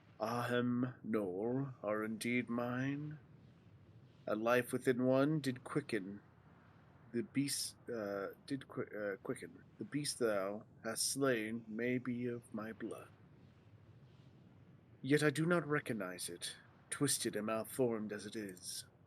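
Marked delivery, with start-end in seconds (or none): 9.8-18.8 put-on dragon voice. Reading a game dragon's lines aloud: put-on dragon voice. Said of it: "the dragon voices are very similar".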